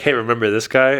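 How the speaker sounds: plain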